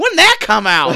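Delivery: put-on very loud elderly old-timer voice. Mocking how another speaker asked a question: imitating Cole like an old person. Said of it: "Cole's like that old person that sits in a theater".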